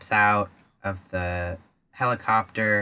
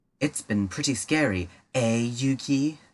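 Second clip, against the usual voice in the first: hammy, fully committed, exaggerated English accent laid on thick; 3 semitones higher than usual. Speaker quoting a great line from Bakura: Bakura's exaggerated English accent. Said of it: "really got into an English accent".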